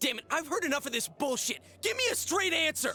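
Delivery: shouting angrily. Speaking to another character in a scene: angry yelling. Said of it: "Stop yelling!".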